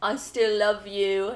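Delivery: put-on British accent. Retelling a phone call line from a performance, imitating a british accent. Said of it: "Does it in a British accent".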